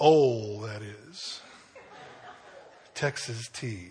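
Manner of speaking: put-on low, soft Deep South Mississippi accent. Recalling what the speaker's dad used to say during a TV show, imitating dad's Mississippi accent. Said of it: "in his Mississippi accent".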